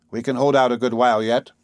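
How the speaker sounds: ordinary delivery, nothing marked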